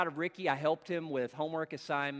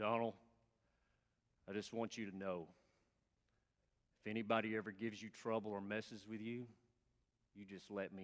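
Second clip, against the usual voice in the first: very soft, hushed, slightly deepened dropped-down voice; 5 semitones lower, 11 dB quieter than usual. Retelling what Ricky said to Donald in the water fountain line, in Ricky's voice, slightly deepened. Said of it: "I'll try to deepen mine a little bit".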